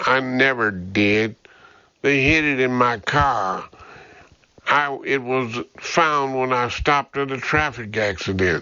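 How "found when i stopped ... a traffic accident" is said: ordinary delivery, nothing marked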